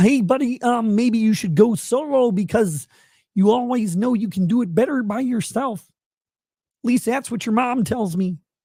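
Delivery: high-pitched, rough character voice. Answering a viewer's message that asked for it: rough Kermit the Frog voice. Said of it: "the Kermit voice is gonna be really rough".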